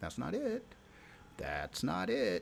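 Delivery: courteous, polite voice. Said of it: "saying very politely".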